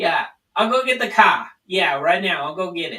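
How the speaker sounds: Rhode Island accent, Bronx and Boston mix. Explaining how people from Rhode Island sound, demonstrate with a Rhode Island accent. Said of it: "and that's the Rhode Island accent".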